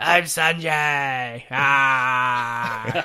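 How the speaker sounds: deep gravelly yell, "ah" drawn out. Redoing the introduction after the others laugh: Wolverine voice. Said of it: "that's supposed to be Wolverine".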